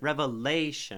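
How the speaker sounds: lay syllable in revelation heavily overdone. Overly stressing a word to find its stress pattern: overstressed lay in revelation. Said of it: "if I overly stress revelation ... So lay is pretty, pretty stressed".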